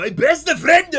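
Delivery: really strong, heavy inflection. On stream, speaker shows how the phrase has to be said, really strong inflection. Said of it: "you have to say it with this really strong inflection".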